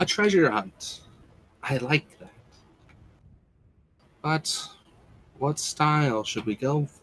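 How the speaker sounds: distant voice fading in, swelling as if on wind. The game master voices a speaker heard as a strong wind blows around the players: voice fading in from afar. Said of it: "feel her kind of nodding along, / sort of like as if it like fades in from the distance and then slowly grows in strength. A strong wind begins to blow around you".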